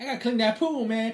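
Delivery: shrill, very high, very loud disguise voice. Imitating a character who sneaks into the Playboy Mansion: imitating his undercover voice. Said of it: "It's his undercover voice".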